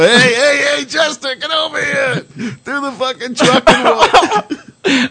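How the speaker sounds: very high, slow, calling stoner voice. Retelling how the stoners called him over: imitating the stoners. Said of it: "the stoners would all get together and go".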